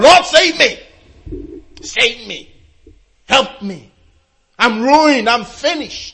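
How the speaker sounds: high-pitched, desperate crying out. Describing people whose security is gone, the speaker acts out crying out to God. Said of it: "then you start crying out to God".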